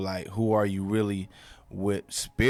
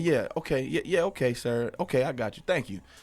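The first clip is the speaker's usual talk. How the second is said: put-on pitched-up, proper, polite business phone voice; 5 semitones higher than usual. Showing how everyone talks on a business phone call: put-on proper phone voice. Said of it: "everybody change their voice, like, to be all proper".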